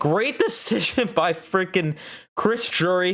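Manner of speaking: overexcited, pumped-up voice breaking on a crack. Pumped fan reacting to a team decision for next season, voice cracking. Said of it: "Sorry for my voice crack there".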